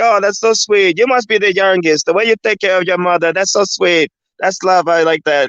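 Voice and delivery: heavy, laid-on, put-on South American accent. Retelling what a nurse said about caring for a mother: imitating thick south american accent. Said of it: "thick South American accent".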